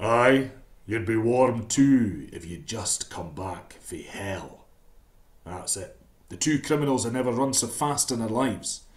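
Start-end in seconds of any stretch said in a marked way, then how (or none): 0.0-4.6 deep, slow booming voice. Narrating a tale, a voice booms out between two grave robbers: deep booming voice. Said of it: "a deep voice boomed out".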